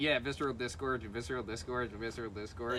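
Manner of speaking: ordinary talk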